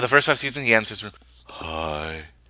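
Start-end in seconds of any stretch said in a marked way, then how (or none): 1.5-2.2 drawn-out, glum, depressed delivery. Naming a sitcom character's early catchphrase: Ross impression. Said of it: "Great impression".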